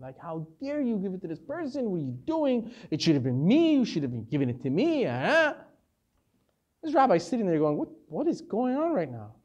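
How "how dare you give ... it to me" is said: upset, scolding telling-off. Retelling a man complaining to the gabbai, acting out an upset man. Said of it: "he got so upset, and he started giving it to the gabbai".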